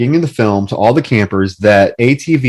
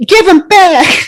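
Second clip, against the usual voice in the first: put-on very high, huffy, flustered, uppity sass; 5 dB louder than usual. Retelling a scene, the speaker imitates a kid whose keys were taken, flustered and uppity. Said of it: "He gets all he gets all flustered and uppity".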